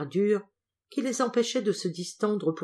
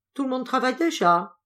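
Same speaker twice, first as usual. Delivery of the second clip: high-pitched, scornful, disdainful, contemptuous tone; 7 semitones higher, 4 dB louder than usual. Madame Doublé, sitting on the boss's stool, speaks in a contemptuous tone. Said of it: "elle dit d'un ton méprisant".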